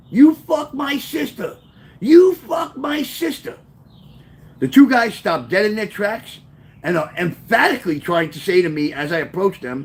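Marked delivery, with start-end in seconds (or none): 0.1-3.5 put-on, high, stretched-out, drawn-out shouting. Retelling running at two guys, retelling his own yelling. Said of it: "I start yelling".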